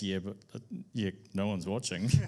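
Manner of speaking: mock, heavy, dripping, very sarcastic tone. Speaker recalls answering Ross while filming with a camera; retelling a very sarcastic remark. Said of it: "in a very sarcastic voice".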